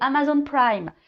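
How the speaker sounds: put-on light English accent.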